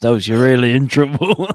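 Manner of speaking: loud mock scolding tone.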